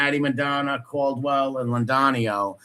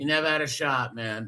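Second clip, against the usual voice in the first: ordinary talk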